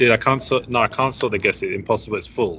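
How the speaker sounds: ordinary delivery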